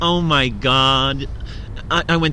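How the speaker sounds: put-on Valley Girl accent, drawn-out god. Explaining what a valley girl accent is, in a valley girl accent. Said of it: "like when they talk like this".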